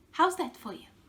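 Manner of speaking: bone-dry, dead straight deadpan delivery, no laugh. Retelling holding up the special mirror to a client: imitating own deadpan line. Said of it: "totally deadpan".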